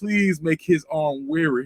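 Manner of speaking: put-on slow, pleading, old-fashioned delivery. Retelling own childhood prayers before a whooping: imitating own prayer like an old slave. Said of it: "I used to talk like a slave".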